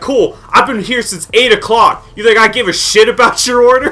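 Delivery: very high, enraged, furious shriek. Retelling what they screamed at someone on the phone: retelling a scream. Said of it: "I started screaming at on the phone".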